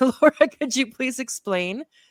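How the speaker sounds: giggling, laughing through the words. Reading out a question for the guest, laughing while talking. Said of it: "I don't know why I'm laughing".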